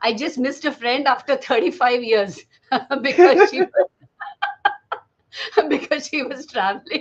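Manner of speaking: talking through bursts of laughter. Responding to another speaker's remark, laughing while talking. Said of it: "I'm sorry I'm laughing so much".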